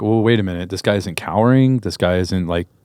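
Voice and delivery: normal talking voice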